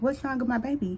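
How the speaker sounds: normal talking voice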